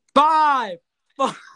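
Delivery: shrill, very high, very loud screaming. Counting down a list for a co-host, scream the numbers. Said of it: "why are you screaming the number?".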